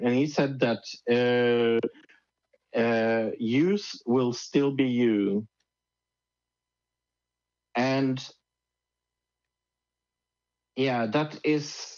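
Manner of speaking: speaking near tears, fighting off crying. Speaker sharing a personal story, holding back tears. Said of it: "I'm trying not to cry".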